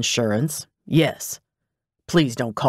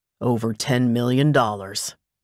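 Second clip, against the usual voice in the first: ordinary delivery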